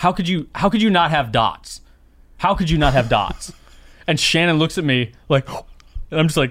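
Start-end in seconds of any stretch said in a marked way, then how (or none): 0.0-3.5 put-on frantic man voice. Retelling a man in a CVS candy aisle questioning a CVS representative; imitating a frantic man. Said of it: "he's just like frantically like".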